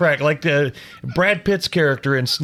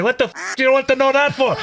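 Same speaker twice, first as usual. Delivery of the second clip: put-on Scottish accent, pitched up; 8 semitones higher than usual. Voicing the smart speaker changed to answer in a scottish accent: scottish accent. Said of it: "change it to a Scottish accent".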